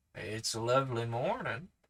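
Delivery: ordinary delivery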